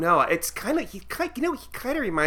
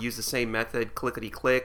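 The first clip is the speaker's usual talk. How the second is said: normal talking voice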